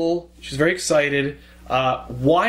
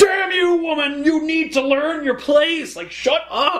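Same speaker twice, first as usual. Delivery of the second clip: very high, drawn-out tantrum rant; 11 semitones higher than usual. Retelling how Superman loses his temper in an argument: Superman throwing a tantrum. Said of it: "ultimately he just has a tantrum".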